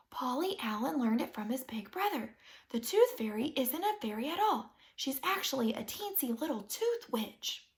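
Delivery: hushed, secretive half-whispered voice. Narrator confides a secret to Mother, half-whispering. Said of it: "I whispered back".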